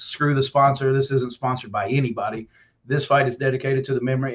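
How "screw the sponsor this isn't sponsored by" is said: usual speaking voice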